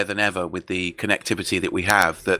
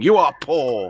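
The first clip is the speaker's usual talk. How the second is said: put-on pompous grand proclamation voice, higher; 6 semitones higher than usual. Picturing stalking the halls of power, pointing a staff: mock grand proclamation. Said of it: "pointing my E L light up staff, going".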